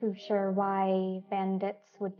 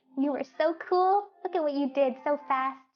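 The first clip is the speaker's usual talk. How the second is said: high, squeaky voice, giggling through the words; 7 semitones higher, 4 dB louder than usual. Endo speaks to the one checking on him, squeaking and giggling. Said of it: "just squeaking and giggling like".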